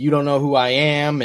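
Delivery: ordinary delivery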